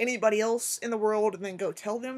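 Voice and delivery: ordinary talk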